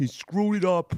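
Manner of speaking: put-on heavy, thick New York accent, pitched way up. Quoting the guy from the mobile tire service, in a thick New York accent. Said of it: "that's a great accent".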